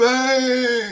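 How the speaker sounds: stunned broadcaster call, very high, stretched "Bang". Retelling the announcer's call, imitating Mike Breen's stunned "Bang!". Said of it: "in disbelief".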